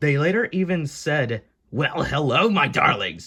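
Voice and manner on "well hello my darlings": put-on sassy, girlish voice. Retelling what a shadow figure said in the museum exhibit, in a mock-sassy girl voice. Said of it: "in a sassy girl voice".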